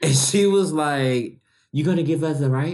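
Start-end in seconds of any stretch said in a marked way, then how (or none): 1.7-2.7 put-on heavy Caribbean accent, laid on thick. Retelling a woman asking for a ride on the golf cart: thick Caribbean accent. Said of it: "she had a thick Caribbean accent".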